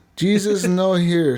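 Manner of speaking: put-on mixed Canadian and Mexican accent. Playing Pedro, saying Jesus is not here: mixed Canadian and Mexican accent. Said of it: "You sound a little Canadian and Mexican mixed together".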